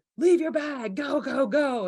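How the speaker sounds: loud, slow, spaced-out barked scream. Recalling airport security, quoting a woman who screamed at them: imitating a woman screaming. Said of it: "this woman was screaming at me like".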